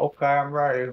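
talking around a mouthful of food, a bit high. Telling the other person they're ready to order, talking with mouth full. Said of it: "It sounds like you have something in your mouth still".

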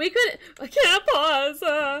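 loud, slow speech while laughing.

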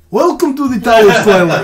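Russian accent, loud and put-on. Voicing a dwarf innkeeper greeting guests: russian accent for a dwarf. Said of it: "so I make my dwarves Russian".

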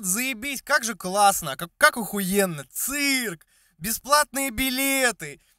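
strained, high-pitched, forced fake cheerfulness. Speaker shows the strained fun of standing with a guitar, mock forced cheerfulness. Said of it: "Посыл был в этом натянутом таком веселье".

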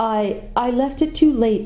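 sheepish, embarrassed, slow and high voice. After a shooting match, a girl answers a companion's teasing in an embarrassed voice. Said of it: "said Susan in an embarrassed voice".

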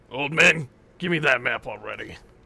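low, quarrelsome, bullying brute voice. Voicing a brute who threatens an old man for a map: brute quarreling with old man. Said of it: "heard quarreling coming from one of the piers".

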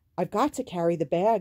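pleading, begging tone. Dicey tells Sammy she has to carry the bag, pleading. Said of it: "Dicey pleaded".

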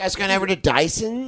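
put-on slow, drawling rich-kid voice. Imitating how the kids with money probably talked: rich kid voice. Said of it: "they probably had this voice".

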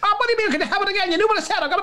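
imitated Kerry accent. Retelling a Kerry person's reply to a man, do the put-on Kerry accent. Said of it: "they talk like this".

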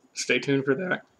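cracked voice, breaking mid-phrase. Signing off a video to viewers, voice cracking. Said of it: "my voice cracked".

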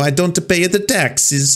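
slow, drawn-out, bad Italian accent. Making fun of a bad Italian accent from a comedy sketch: mocking Elon Musk's bad Italian accent. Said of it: "Elon Musk's shitty Italian, uh, accent".

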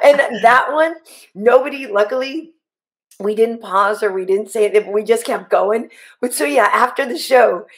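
plain

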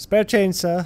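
put-on high British accent of a street vagrant. Playing a game, the speaker voices a hobo character in a british hobo accent. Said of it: "I don't know why this hobo has a British accent".

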